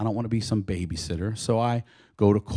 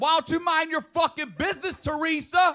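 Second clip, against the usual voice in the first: mock shrill, very high, angry shouting. Retelling yelling back at a neighbor through the bathroom window: imitating own angry yelling. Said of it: "Why are you yelling and cussing at me".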